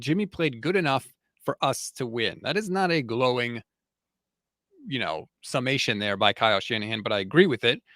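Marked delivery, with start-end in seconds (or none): none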